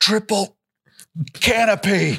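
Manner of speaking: angry grumble. Retelling what another man said while mad, mimicking an angry mutter. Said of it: "he just kept under his breath".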